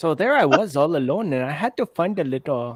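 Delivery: put-on shift into Pakistani accent. Improvising a comic monologue as a character, slipping into a Pakistani accent. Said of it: "I went Pakistani there".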